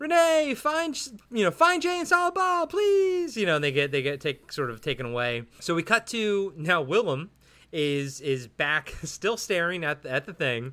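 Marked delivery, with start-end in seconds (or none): 0.0-3.4 put-on yelling out, much higher in pitch. Someone recapping a movie scene acts out a character's call, retelling a yell. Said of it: "yells out to her and he's like".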